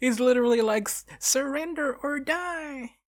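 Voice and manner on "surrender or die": mock yelling in a much higher voice. Describing a mascot on a flying quadcopter with a screen, imitating a yelling mascot. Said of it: "just like yelling at you to surrender".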